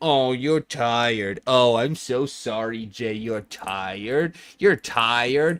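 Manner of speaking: sarcastic mock scolding tone. Scolding yourself for procrastinating, in sarcastic mock scolding. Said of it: "Is like one of those like".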